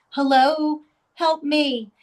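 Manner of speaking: woman's voice, very clear. Retelling a woman's voice heard on a recorder: mimicking a woman's recorded voice. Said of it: "it still freaks me out to mimic her".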